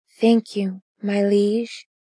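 whispering. She replies to her liege's praise, whispering. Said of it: "she whispered".

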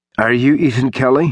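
nervous, nerves audibly showing. A delivery man, backing away from the man at the door, asks nervously. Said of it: "the guy asked nervously".

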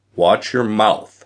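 plain reading voice

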